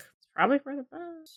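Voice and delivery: very quiet, barely audible mutter under breath. Retelling what a character muttered after hearing news: imitating a mutter under the breath. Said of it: "under his breath".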